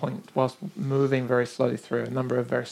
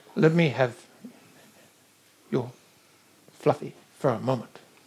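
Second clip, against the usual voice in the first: small, little creature-like voice. Voicing a small creature asking for another's toy: little creature voice. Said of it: "little kind of creature like".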